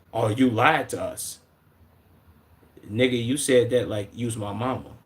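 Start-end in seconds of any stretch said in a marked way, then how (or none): 0.1-1.4 slow, drawn-out, accusing police officer voice. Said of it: "when officers be like".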